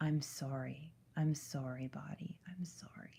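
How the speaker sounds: put-on tearful sobbing. Retelling breaking down and apologizing to her own body: retelling a sobbing apology.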